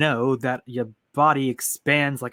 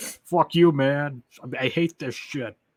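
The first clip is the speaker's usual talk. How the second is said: put-on overconfident game-character voice. Speaker describing a game hero's comebacks, mimicking Ethan's cocky confidence. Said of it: "he says it so confidently".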